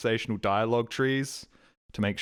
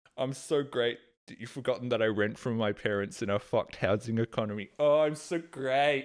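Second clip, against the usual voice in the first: pretend smug boastful tone. Mocking the idea of bragging to chat about talking with a lonely neighbour: mock smug bragging. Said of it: "this wasn't supposed to be a".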